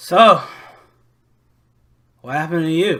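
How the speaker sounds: put-on drunken voice. Voicing a drunk patron at the bar asking a question: drunken voice. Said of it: "kinda drunkenly sitting next to you at the bar and says".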